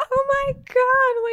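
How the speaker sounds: acted out, very high shriek, "God" stretched out. Retelling a best friend watching it with her, imitating someone screaming. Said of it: "She was, like, screaming the whole".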